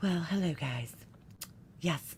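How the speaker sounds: whispered, gentle, very soft, breathy hush. Greeting the chat to show the difference in tone, in a soft voice. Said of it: "I'm gonna talk in my soft voice now".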